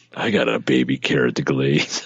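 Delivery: creepy put-on character voice. Joking about Thanksgiving stuffing: creepy Uncle Tickle voice. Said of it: "if you say anything in that voice".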